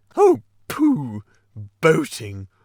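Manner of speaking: loud, swooping, brushing-off scoff of great disgust. Toad interrupting the Rat's talk about his rowing, in great disgust. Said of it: "in great disgust".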